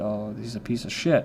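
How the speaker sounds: normal talking voice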